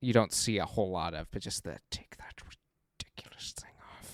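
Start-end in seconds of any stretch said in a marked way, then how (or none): 1.9-4.1 hushed, seething whisper of simmering rage. Quoting the villain's line again: Snoke in simmering rage. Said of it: "simmering rage".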